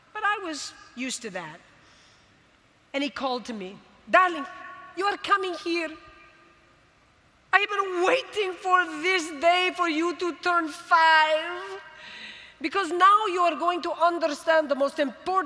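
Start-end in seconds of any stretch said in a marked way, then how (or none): 4.0-15.4 thick put-on Greek accent, rolled R's, "five" drawn out. Retelling a father calling the speaker to the den: imitating father's thick Greek accent. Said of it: "with his thick accent".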